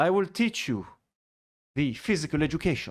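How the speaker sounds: put-on Spanish accent. Voicing a guy from a photo: put-on Spanish accent. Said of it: "I gave him a, a Spanish accent".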